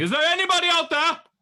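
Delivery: shouting. Voicing a character calling out to anyone nearby: yelling. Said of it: "Gemini just starts yelling".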